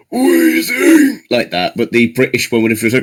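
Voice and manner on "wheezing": very high, squealed cartoon monster creature cry. Showing how the original creature would say its name: original Wheezing cry. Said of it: "the original one would have been like".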